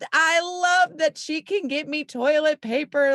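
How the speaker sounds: very high, stretched-out, drawn-out yell. Retelling a bathroom moment with no toilet paper: imitating herself yelling. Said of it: "So I'm yelling".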